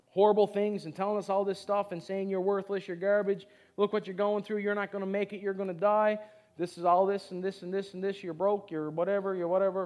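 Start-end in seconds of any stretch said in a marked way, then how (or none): none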